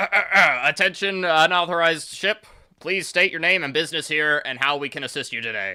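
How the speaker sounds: halting, official PA voice. Voicing a man on the intercom addressing an unauthorized ship: man's voice over the intercom. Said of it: "you hear a man's voice go".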